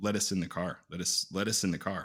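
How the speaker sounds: ordinary delivery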